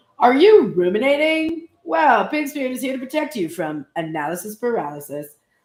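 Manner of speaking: salesy infomercial TV announcer voice. Reading the Pig Spirit protection message aloud, infomercial voice. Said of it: "the protection message always sounds like an infomercial".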